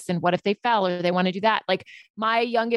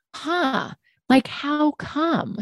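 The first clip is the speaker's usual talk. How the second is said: wondering, very slow, high, drawn-out curious musing; 7 semitones higher than usual. Showing how to approach differing views without judgment: curious tone. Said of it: "even using that tone of voice".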